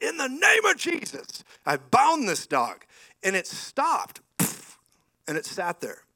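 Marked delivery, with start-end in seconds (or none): 0.0-2.8 very high, swooping, rebuking yell. Retelling facing down a charging dog, retelling own yell. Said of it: "I yelled".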